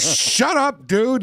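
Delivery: angry, very high-pitched yell. Retelling someone raging at a game announcer: imitating someone yelling angrily. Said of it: "He got so mad".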